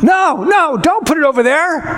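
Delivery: mock yell, high-pitched and drawn out. Retelling how the homeowner yelled about the towel: imitating someone yelling. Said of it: "he starts yelling at me".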